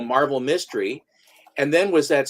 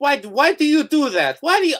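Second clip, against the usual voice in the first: put-on very high, dramatic, insistent Spanish accent; 12 semitones higher, 4 dB louder than usual. Retelling a movie character's complaint about a pose, sounding like Inigo Montoya. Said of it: "I sound like Inigo Montoya".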